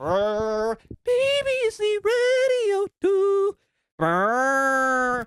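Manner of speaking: very high, whining, drawn-out power-drill noise. Describing how loud the drills are, doing an impression of a drill. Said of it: "This is um my impression of a drill".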